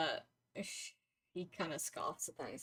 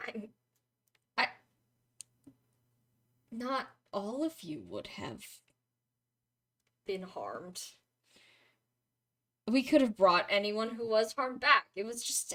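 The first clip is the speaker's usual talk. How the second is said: angry, higher pitch and louder; 4 semitones higher, 4 dB louder than usual. In a role-played scene, a character protests another's argument, angry. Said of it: "jaw continues to work angrily".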